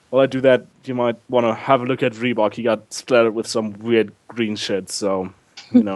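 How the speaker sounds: ordinary talk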